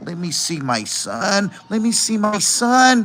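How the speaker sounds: eerie, drawn-out scary tone. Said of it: "That's scary".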